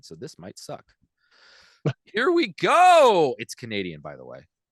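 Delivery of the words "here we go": very loud, voice cracking mid-line. Introducing today's stupid news segment to a co-host, voice crack. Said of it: "a nice voice crack there".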